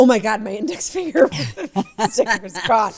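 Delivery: sudden, loud, alarmed, panicked outburst. Recalling her sticker popping off at dinner, retelling a panicked outburst. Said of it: "And I panicked".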